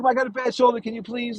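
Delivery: high, whiny, crying and begging. Retelling someone begging a cop about his bad shoulder, imitating someone crying.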